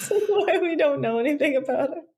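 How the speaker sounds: high, giggly, laughing through the words.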